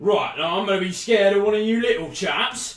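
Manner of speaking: very loud, high-pitched, grumbling, complaining tone. Game narrator voicing a man with a hole in his boot, answering the players, loudly complaining. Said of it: "the men who was complaining loudly about a hole in his boot. Uh, [name] continuously told him that uh, there was nothing that medicine could do for a hole in the boot. / And then the man slapped him".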